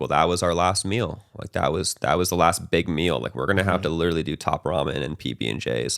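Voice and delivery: ordinary talk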